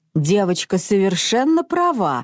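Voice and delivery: plain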